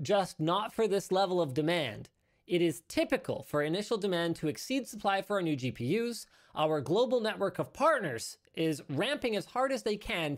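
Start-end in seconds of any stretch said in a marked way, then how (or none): none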